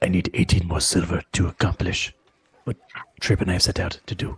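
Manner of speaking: low, rushed undertone with voice dropped. Player asking Octavius for eighteen more silver so Seth doesn't hear, lowered voice. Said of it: "I'll lower my voice so Seth doesn't hear".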